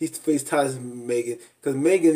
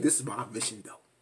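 straight-faced, deadpan, mock-serious delivery; 9 dB quieter than usual. Retelling a cast member's line from the show: imitating a straight-faced line. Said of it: "he said it with a straight face".

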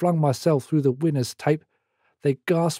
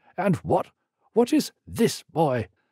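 outraged, disgusted, swooping tone; 2 semitones higher than usual. An outraged teacher confronts a boy over his sketch, disgusted demand. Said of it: "pointed at the offending matter with disgust and demanded".

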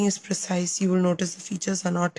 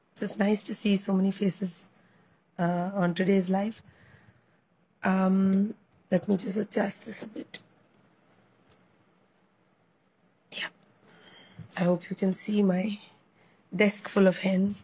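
weak, feeble, barely audible voice. Host greeting viewers on a live stream while recovering from illness, poor voice. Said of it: "I have to apologize for the poor voice".

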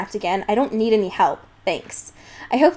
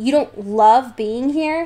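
slow, mocking, teasing tone of disbelief; 2 semitones higher than usual. Narrator reads a story; a coworker answers the narrator's complaint, mocking. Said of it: "he said mockingly".

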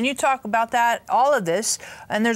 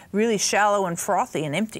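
normal talking voice

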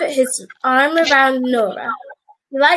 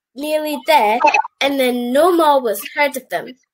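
usual speaking voice

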